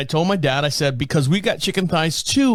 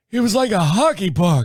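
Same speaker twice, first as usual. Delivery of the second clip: put-on accent with Yiddish inflection; 4 semitones higher than usual.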